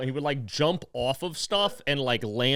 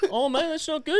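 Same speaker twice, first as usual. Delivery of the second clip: put-on very high, totally unbothered puppet voice; 13 semitones higher than usual. Retelling how a guy reacted to someone in the worst pain: imitating a chill tone. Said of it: "He was always chill".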